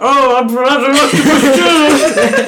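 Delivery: high, loud, slow, stretched-out excited voice.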